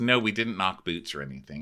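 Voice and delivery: ordinary talk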